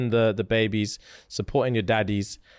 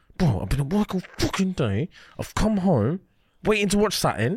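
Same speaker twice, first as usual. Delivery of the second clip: imitated deep-voiced angry ranting; 8 semitones higher than usual. Retelling a voice note a guy sent: imitating a deep-voiced angry caller. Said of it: "deep voice".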